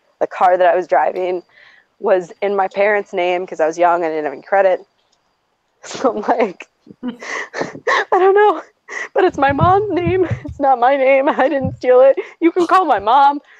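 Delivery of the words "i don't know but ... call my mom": mock, high, drawn-out sobbing through tears, near hysterical. Retelling pleading with a police officer while handcuffed, imitating hysterical crying. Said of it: "Like in tears with this police officer".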